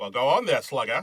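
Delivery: put-on old-timey 1940s-style man voice. Speaker about to read the back of a borrowed Blu-ray: 1940s guy voice. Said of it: "1940s guy voice".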